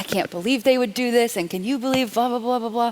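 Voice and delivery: mock railing on and on. Retelling complaining about peers to the director: imitating own ranting. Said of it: "just started railing on all my peers".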